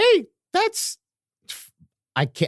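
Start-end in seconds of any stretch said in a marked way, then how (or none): 0.0-1.0 very high, straining, strained put-on character voice. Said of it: "I can't do this voice".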